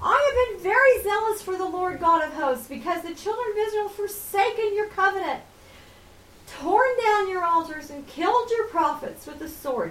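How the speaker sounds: high, whiny, complaining tone. A speaker retells Elijah's reply when a voice asks what he's doing there, acting out Elijah whining. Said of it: "Can you hear him whining?".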